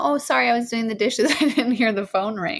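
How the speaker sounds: put-on chipper, cheerful tone. Retelling how she answered the phone after missing a call, mock-chipper phone answer. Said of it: "like kind of chipper".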